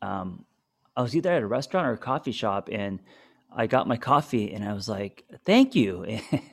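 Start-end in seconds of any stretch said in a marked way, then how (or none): 5.5-6.2 put-on baby talk, as if to a toddler. Retelling thanking someone at a coffee shop: baby talk tone. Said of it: "talking to Logan like that".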